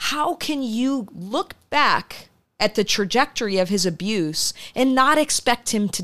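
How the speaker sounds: drawn-out yell out loud. Retelling yelling out loud while watching alone, retelling a yell. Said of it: "I'm yelling out loud".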